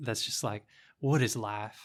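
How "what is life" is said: badly put-on, really bad Southern accent. Quoting a movie character's voiceover line: imitating a bad southern accent. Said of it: "a character voiceover with a really bad Southern accent".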